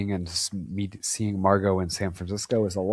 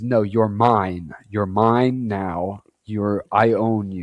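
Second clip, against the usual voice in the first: put-on angry voice, slower pace. Recapping a story, acting out a man's angry outburst. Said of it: "he gets real pissed off. He says".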